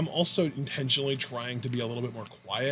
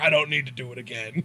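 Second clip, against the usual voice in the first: put-on Scottish accent. Imitating a wrestler's line to Brock: Drew McIntyre impression. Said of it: "[name]'s Scottish accent is pretty on point".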